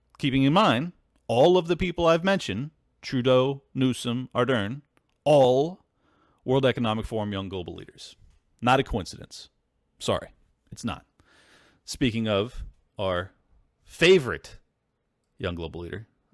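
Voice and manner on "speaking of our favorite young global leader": scornful, mocking, disdainful sarcastic drawl. Mentioning a political leader the speaker dislikes: disdainful sarcasm. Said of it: "I say with complete disdain and sarcasm".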